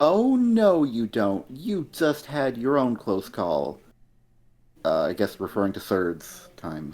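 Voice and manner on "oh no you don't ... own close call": mock abrupt, explosive, angry outburst. Retelling a comic character's reply to a teammate: imitating a sudden angry outburst. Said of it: "just kind of explodes suddenly".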